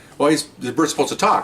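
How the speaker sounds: plain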